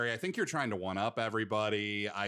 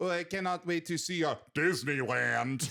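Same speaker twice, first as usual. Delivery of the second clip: put-on French accent, pitched up; 5 semitones higher than usual. Discussing accents, imitating a French person who came over here: put-on French accent. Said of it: "if a French person came over here".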